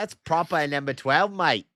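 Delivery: put-on Australian accent. Correcting another speaker's phrase, in an Australian accent. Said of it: "now I'm Australian".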